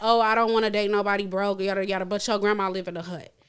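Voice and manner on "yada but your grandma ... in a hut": ordinary talk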